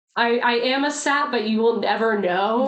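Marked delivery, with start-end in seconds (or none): none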